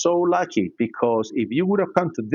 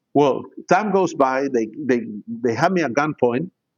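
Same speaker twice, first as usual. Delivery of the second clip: ordinary talk, nothing marked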